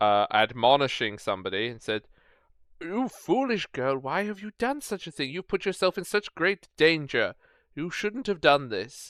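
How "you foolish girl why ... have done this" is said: put-on pitched-up old man voice, scolding tone. Behind a door, an old man scolds a girl; old man's voice. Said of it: "you hear an old man's voice".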